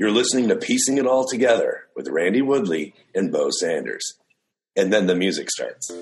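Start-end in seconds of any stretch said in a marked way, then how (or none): 0.0-4.1 on-air radio voice. Trying out a more official intro for them, in a radio voice. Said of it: "using my radio voice to say".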